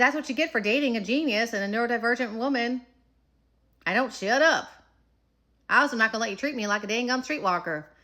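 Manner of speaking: put-on Appalachian accent with a twang. Retelling what was said to a partner, in an Appalachian accent. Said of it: "my Appalachian accent comes out".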